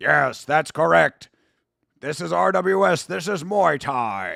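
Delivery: slow, plodding, dragged-out ogre voice. Speaker voices Joe Comerford, admittedly making him sound like an ogre. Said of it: "I'm making him sound like an ogre".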